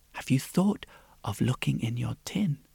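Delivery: soft, hushed whisper. She speaks to the sad princess, whispered. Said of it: "she whispered".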